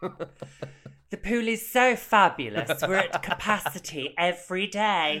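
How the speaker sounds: high fake British accent. Retelling a story, voicing a person who turns a newcomer away, fake British accent. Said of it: "a shade of your Club Silencio Dorothy accent".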